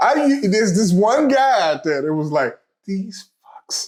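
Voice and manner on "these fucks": whisper, higher and quieter. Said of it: "he's, like, whispering".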